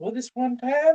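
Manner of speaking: put-on very high old granny storyteller voice. Asked to make up a story in a character voice, starting it in an old grandmother voice. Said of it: "you made her sound like a grandmother".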